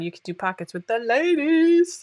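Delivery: silly, high-pitched fake voice.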